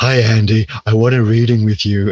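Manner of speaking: male voice faking a woman's voice. Retelling an odd call at three in the morning, man faking a female voice. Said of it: "sounded kind of like a male who's pretending to be female".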